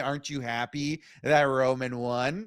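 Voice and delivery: ordinary talk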